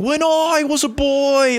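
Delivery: very high, very slow, drawn-out full-lung yell. Retelling a speech that a podcast made fun of: imitating Richard Branson yelling. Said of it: "yelling at the top of his lungs".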